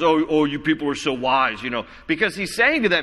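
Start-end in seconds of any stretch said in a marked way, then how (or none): none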